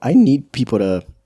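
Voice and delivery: voice cracking mid-phrase, high and loud. In a casual conversation, the speaker's voice cracks mid-sentence: voice cracking. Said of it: "My voice just cracked".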